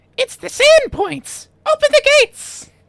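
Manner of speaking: very high, squeaky, shrill goblin voice. Game master voicing goblins as the players reach the bridge, goblin voice. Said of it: "you hear goblin voices".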